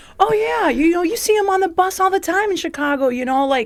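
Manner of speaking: very high-pitched know-it-all lecturing voice. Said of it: "somebody pops up and's like".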